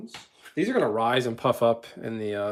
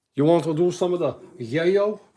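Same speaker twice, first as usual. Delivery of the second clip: loud, pitched-up gangster voice; 5 semitones higher, 5 dB louder than usual. Cooking and joking, then doing a Scarface voice. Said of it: "Like Scarface".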